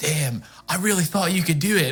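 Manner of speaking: very deep, low, half-whispered dude-bro voice. Speaking in character to another character in Sylvan: dude bro half-whisper. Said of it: "whisper in the most dude bro Sylvan you've ever heard".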